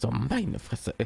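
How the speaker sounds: startled, surprised, non-aggressive oh-my-god tone. Acting out a reaction to something unexpected, acting surprised. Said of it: "so einen überraschten, ja, noch nicht mal so einen aggressiven Ton".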